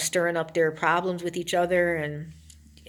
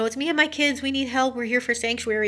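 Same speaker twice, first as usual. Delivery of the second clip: mimicked screaming, pitched higher; 7 semitones higher than usual. Speaker tells of a woman banging on a door with her kids, imitating her screaming. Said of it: "she's banging on the door and she's screaming".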